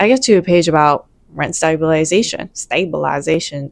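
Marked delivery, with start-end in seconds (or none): 2.5-3.7 accidental Southern twang, lower and quieter. Reading a lease aloud and reaching rent stabilization: slipping into Southern accent. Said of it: "The Southern came out in me".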